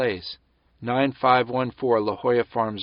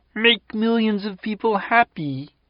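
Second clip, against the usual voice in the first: high, cartoon frog-puppet voice; 9 semitones higher than usual. A narrator recalls Rama's words, spoken in his Kermit the Frog voice. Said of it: "in his Kermit the Frog voice".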